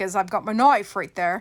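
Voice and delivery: loud put-on Australian accent. Explaining where the dolls get opened, the speaker says knife in a Crocodile Dundee Australian accent. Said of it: "I have to be Australian when I say that word".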